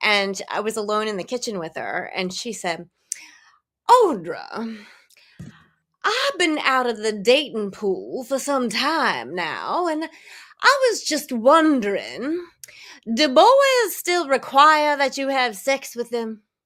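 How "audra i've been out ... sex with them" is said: put-on high, drawling old-fashioned Southern belle Georgia accent. Retelling what Grandma said to her alone in the kitchen, in an old-school Georgia accent. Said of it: "she had this old school Georgia Georgian accent".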